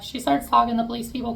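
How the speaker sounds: plain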